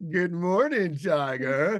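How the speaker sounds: mock-sexy, put-on seductive voice. Speaker retells a woman's greeting they wanted on their alarm clock, imitating a sexy voice. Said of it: "Sexiest voice ever".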